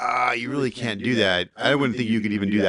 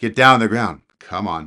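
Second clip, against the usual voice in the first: mock taunting tone, louder; 6 dB louder than usual. Retelling how the lead instructor taunted a man to come at him: imitating someone egging a man on. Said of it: "Like he was egging him on".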